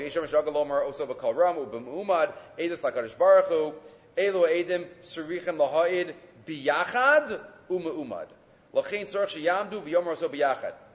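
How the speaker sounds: usual speaking voice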